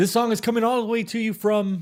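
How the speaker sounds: put-on old-time 1940s radio jock announcer patter. Livestream hosts trying out an announcer voice, like a 1940s radio jock. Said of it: "Like a 40s radio jock".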